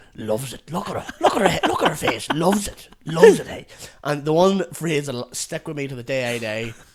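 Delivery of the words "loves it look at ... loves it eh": animated, loud, swooping play-by-play commentary. Retelling how a man narrated a video to the group: imitating his running commentary. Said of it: "And he just kept going".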